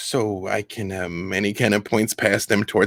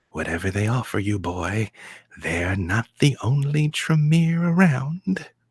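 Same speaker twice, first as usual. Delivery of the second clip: whispered close and soft. Narrating a game scene, the speaker voices a man whispering in the listener's ear. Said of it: "He whispers in your ear".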